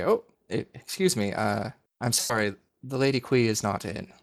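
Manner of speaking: nervous, flustered, halting, stumbling maid voice. Voicing a maidservant who steps out with bed cloths: flustered maidservant voice. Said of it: "a maidservant will step out".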